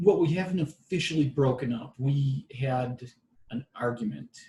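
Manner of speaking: plain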